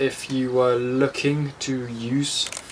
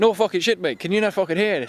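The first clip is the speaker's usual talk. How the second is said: put-on Irish brogue, pitched up; 6 semitones higher than usual. Speaker retelling answering a man who asked if he had an accent, in a put-on Irish accent. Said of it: "I was putting on this Irish accent".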